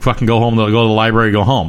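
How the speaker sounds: plain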